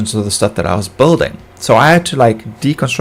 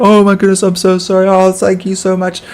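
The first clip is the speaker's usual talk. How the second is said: put-on, high, weepy, fake sobbing voice; 8 semitones higher than usual. Retelling what a laughing driver says when he stops, imitating pretend crying. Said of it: "he pretends he's crying like".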